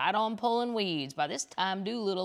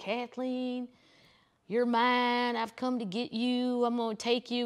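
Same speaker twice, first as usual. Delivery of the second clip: put-on screaming, yelling voice; 4 semitones higher than usual. Retelling a man who got backstage at a sunday show, imitating a screaming stalker. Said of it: "And he was just screaming".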